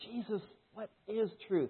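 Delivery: quiet, earnest, sincerely searching tone. Wondering how Pilate asked Jesus his question, acting it out as Pilate, sincerely seeking tone. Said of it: "was it like a sincerely seeking tone of voice?".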